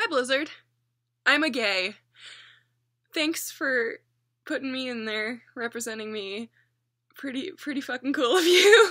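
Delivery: crying through the words, tearful and choked up. Thanking blizzard for representing them in a comic, tearful, crying. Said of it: "now there's tears going down my face".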